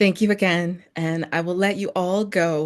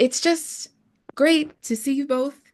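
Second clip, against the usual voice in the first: choked up, pitched up, halting, breaking mid-phrase; 8 semitones higher than usual. Thanking two guests at the end of an event, getting emotional. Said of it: "And am I getting emotional?".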